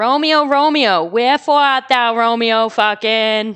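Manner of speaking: South Boston townie accent, laid on thick. Doing Shakespeare as a Southie townie lady: Southie townie Boston accent. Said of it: "some Southie townie lady smoking a Newport".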